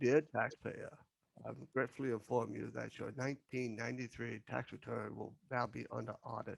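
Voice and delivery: put-on soothing reading voice. Imagine Morgan reading an IRS notice aloud to a taxpayer, in a soothing Morgan voice. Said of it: "it's that soothing voice that he has".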